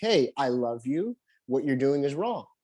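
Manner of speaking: plain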